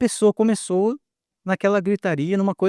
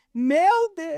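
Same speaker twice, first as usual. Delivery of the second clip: mock very high-pitched yell; 9 semitones higher than usual. Retelling what one of your friends suddenly yelled, imitating a shout like Edir Macedo. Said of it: "mas gritar assim".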